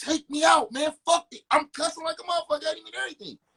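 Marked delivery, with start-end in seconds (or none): 0.0-1.4 loud, tearful, crying yell. Retelling how he yelled at the man who wouldn't take him out: reenacted yelling and crying. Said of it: "I'm yelling at him, crying".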